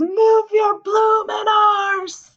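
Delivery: put-on, very high, drawn-out hollering yell. Retelling a scene at a horse race: imitating a yell. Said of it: "And so she yells".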